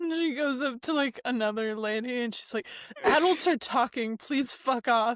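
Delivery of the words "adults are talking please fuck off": mock rude, aggressive grown-up voice, dismissive. Recounting a story where a woman brushes off a girl asking for help, imitating an aggressive adult. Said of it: "just so aggressive".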